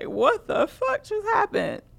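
high, slow, stunned disbelief. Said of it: "standing there like".

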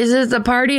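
imitated very drunk man. Retelling a viral video story, imitating a very drunk man. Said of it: "was so shit-faced that he was like".

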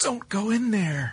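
very high, hushed, scared voice. Demonstrating how voice actors get asked for a line reading: scared. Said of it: "say it like you're scared".

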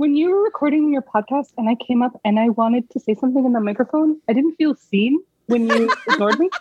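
put-on, self-aware cat voice. Voicing the pet cat Bud talking to Mom: voicing the cat Bud. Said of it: "his voice I gave him is".

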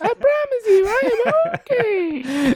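squeaky helium-high voice. Joking as Mascherano that he is fine: high helium Mascherano voice. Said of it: "did you replace your air conditioning unit with helium".

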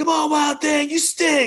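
put-on, very high, shrill, loud, frustrated yell. Comparing self to a movie fan heckling a pitcher: frustrated Major League fan. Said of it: "that frustrated, like, uh, the Major League fan".

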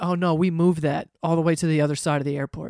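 plain

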